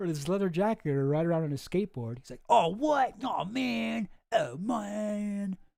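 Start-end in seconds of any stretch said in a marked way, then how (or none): 2.5-5.6 bad British skater-dude voice, very slow, high. Joking about Prince Andrew losing his sunglasses and skateboard: Prince Andrew as British skateboarder. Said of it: "I'm trying to do a British accent and a whatever skateboarder voice".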